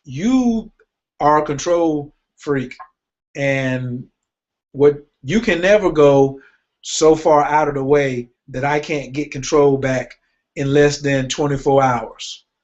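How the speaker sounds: ordinary delivery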